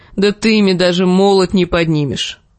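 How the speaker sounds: ordinary delivery, nothing marked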